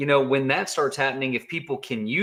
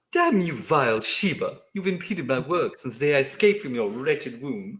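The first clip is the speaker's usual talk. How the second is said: cartoon baby character voice. Scolding a Shiba named Blaze at bedtime, Stewie voice. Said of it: "he's doing Stewie".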